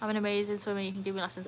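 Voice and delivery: ordinary talk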